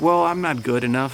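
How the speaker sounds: plain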